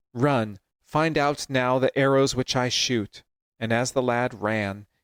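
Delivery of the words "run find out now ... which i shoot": normal talking voice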